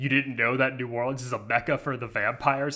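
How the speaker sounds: ordinary talk, nothing marked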